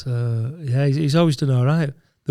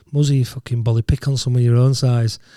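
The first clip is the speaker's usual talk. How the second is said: normal talking voice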